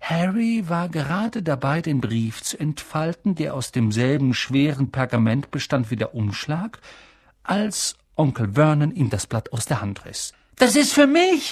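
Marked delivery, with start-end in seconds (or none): 10.6-11.5 very high cry, calling out. A nephew protesting as his uncle snatches his letter, calling out. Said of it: "rief Harry".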